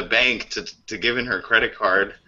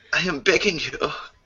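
sultry, purring put-on Austrian voice, higher pitched; 4 semitones higher than usual. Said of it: "[name] mixed with [name]".

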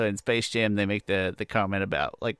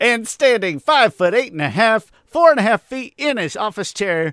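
sports announcer voice, much higher, louder and slower; 12 semitones higher, 9 dB louder than usual. Introducing his friend with a big intro, basketball announcer voice. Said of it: "in like a basketball announcer voice".

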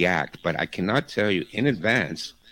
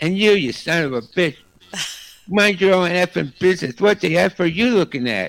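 put-on drunk woman voice cussing, higher and louder; 10 semitones higher, 5 dB louder than usual. Retelling a drunk woman on a streetcar cussing out passengers: imitating a drunk woman cussing. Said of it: "swear and, and cuss them out".

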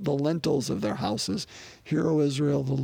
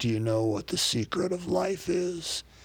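rough cowhand voice; 3 semitones higher than usual. Retelling a scene on horseback, Jack Palance asks Billy Crystal, rough Jack Palance cowboy voice. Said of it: "in his rough cowboy voice".

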